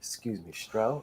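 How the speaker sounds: very quiet, soft, hushed voice. Retelling speaking up to Stro, very soft voice. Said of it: "It was a very soft voice".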